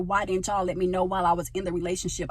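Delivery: ordinary delivery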